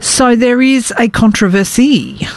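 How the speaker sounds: bad fake French accent on "controversy". Introducing a news story, saying it in a bad French accent. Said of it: "which is how you say controversy with a bad French accent".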